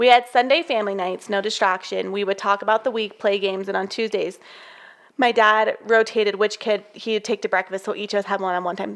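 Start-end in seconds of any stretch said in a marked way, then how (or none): none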